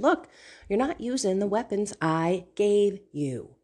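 plain

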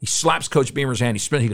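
plain

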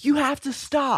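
very high, shrill screaming. Retelling a driver who honked and screamed at the speaker, imitating a scream. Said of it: "She starts pointing and screaming at me".

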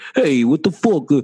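put-on New York accent. Speaker demonstrating one of their favorite accents, new york accent. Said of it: "It's like the New York accent".

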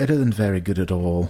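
crusty old put-on voice. Retelling a baking judge's verdict, as Mary Berry: Mary Berry impression. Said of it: "that crusty old Mary Berry's like".

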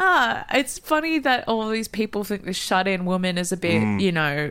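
ordinary talk

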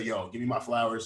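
ordinary delivery

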